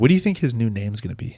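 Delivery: imitated whispering voice. Retelling what the girlfriend asked at the show's start: imitating a whisper. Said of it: "she just kinda whispered in my ear".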